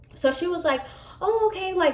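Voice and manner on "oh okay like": high, sweet passive aggressive tone. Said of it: "Now we're getting passive aggressive".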